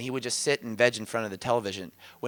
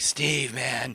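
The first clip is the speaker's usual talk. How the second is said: deepened, put-on surfer dude voice. Recalling a fragment who talked like a surfer dude, deep surfer dude voice. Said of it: "he she she would talk like the surfer dude. Her voice would deepen".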